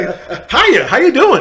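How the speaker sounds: very loud, very drawn-out, sing-song and cheery. Retelling greeting a police officer: imitating a cheery greeting. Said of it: "as cheery as can be".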